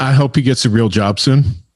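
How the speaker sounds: ordinary talk, nothing marked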